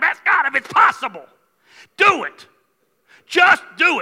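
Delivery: put-on old-school preacher voice. Joking about how an old school preacher would preach: old school preacher voice. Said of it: "if I was an old school preacher".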